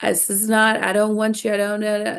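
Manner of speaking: put-on, imitated loud bawling and sobbing. Retelling how a mom in a video broke down: imitating someone bawling. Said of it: "she just starts bawling".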